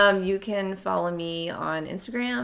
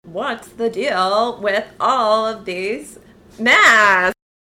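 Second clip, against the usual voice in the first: put-on loud, full-on valley girl voice; 7 dB louder than usual. Showing off voices to listeners, then talking like a valley girl. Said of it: "I can talk like a valley girl".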